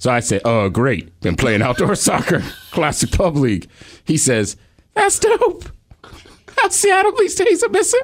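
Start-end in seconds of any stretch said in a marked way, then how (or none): 4.9-8.0 very high, squeaky put-on character voice. Retelling a conversation, quoting the other man's replies; high-pitched put-on voice. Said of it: "Someone with high pitch".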